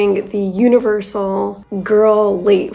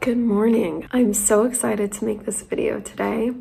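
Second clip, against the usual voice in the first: sleepy, groggy, fresh-out-of-bed voice; 5 dB quieter than usual. A recruiter starts a day-in-the-life video right after waking, in a just-woke-up voice. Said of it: "As you can tell from my voice, I literally just woke up".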